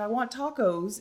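mock tearful, sobbing little boy voice, crying. Retelling a video of a little boy answering his mom, imitating him crying. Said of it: "And he's like crying".

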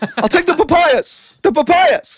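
insistent, loud, shrill repeated shouting, pitched very high. Retelling freaking out when they didn't understand, yelling papayas. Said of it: "I kept yelling um Papayas at them".

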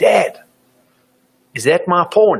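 mock child's voice hollering at top volume, high. A parent retells his little kid shouting in a supermarket, retelling a child's yell. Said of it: "he yells out at the top of his voice".

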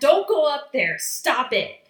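loud, high-pitched screaming. Retelling screaming at a character while writing notes: retelling screaming at him. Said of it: "screaming at him".

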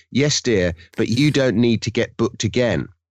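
ordinary talk, nothing marked

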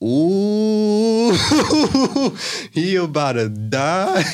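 excited, high, loud laughing gasp.

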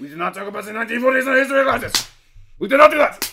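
very high, very loud, shrill, booming dictator voice. Imitating the town's long-serving mayor as an authoritarian ruler: imitating the mayor as a dictator. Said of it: "she just starts coming out wearing Hugo Boss suits, being like".

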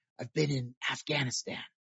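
soft, hushed whisper. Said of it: "he whispered to me".

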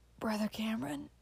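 whispered hoarsely. A man holding his pastor's hand calls out to him in a hoarse whisper. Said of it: "he whispered hoarsely".

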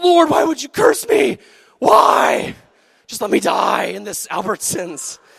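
play-acted boiling-mad, loud, rough, rasping voice. Retelling being furious inside the store, acting out a mock-angry plea to the lord. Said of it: "My blood is boiling".

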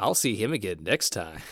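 put-on sly, suggestive, leering delivery. Retelling how Belinda leaves on a cryptic note: pervy Belinda impression. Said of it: "almost pervy note".

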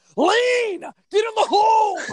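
high, loud screaming.

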